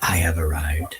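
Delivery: hushed voice. Acting out a character who lights a cigarette, then whispers. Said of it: "and then whispers".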